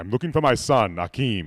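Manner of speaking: booming, projected, deepest bass voice. Joking about ordering at fast food places: James Earl Jones voice. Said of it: "Sounds a lot like I ate James Earl Jones".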